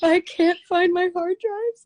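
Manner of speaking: very high, loud, tearful sobbing wail. Retelling what she said crying on the phone: imitating someone crying. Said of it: "her crying on the phone".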